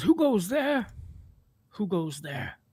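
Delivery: eerie, high ghostly voice calling out. Voicing a ghostly figure who looks up at newcomers: ghostly figure voice. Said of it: "the ghostly figure in the center of the room looks up and says".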